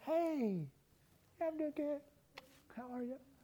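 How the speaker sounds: very high-pitched Sunday-best voice. Speaker showing how we answer the phone: best Sunday voice. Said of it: "your best Sunday voice".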